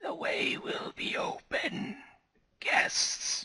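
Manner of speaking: rasping, breathy, very slow whisper. Voicing an unknown caller on the phone: raspy voice. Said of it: "you hear a raspy voice".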